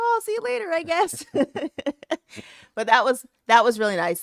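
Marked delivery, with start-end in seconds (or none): 0.0-1.3 very high, resigned, mock tone, tossed off. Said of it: "me and Valerie just gonna be like".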